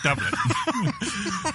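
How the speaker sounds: very high, very slow, stretched, drawn-out mock voice.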